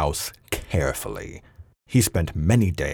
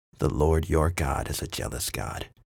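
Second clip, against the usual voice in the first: mumbled under the breath, half to himself; 4 dB quieter than usual. Conrad, just scolded for brooding, mutters as he lifts his cup. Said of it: "he muttered".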